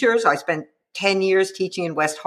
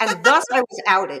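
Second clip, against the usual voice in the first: usual speaking voice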